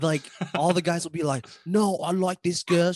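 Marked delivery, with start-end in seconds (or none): 1.7-2.9 put-on British accent, pitched higher. Imitating guys on a dating show talking about their type: put-on British accent. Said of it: "What accent is that".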